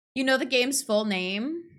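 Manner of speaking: ordinary talk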